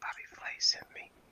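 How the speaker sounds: hushed whisper, very close, as if into ear. Retelling leaning into a woman's ear to tell her something: retelling saying into her ear. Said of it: "I lean into her ear and I say".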